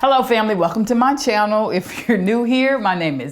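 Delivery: talking with words broken up by laughter. Opening a video and greeting viewers, laughing while talking. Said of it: "I don't even know why I'm laughing".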